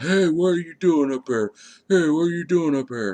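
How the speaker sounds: mock very high-pitched, shrill yelling. Retelling how a man ran up to them: imitating a man yelling. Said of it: "starts yelling".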